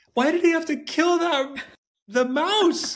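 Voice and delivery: imitated tearful crying child voice. Retelling what a tearful son asked after the creature was killed: imitating a crying son. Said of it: "my son bursts into tears".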